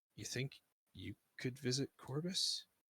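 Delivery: slow, hushed, leaning-in, close half-whisper. Voicing a character leaning in to a player: half-whispering close. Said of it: "he kinda, like, whispers close".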